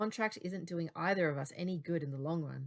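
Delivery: plain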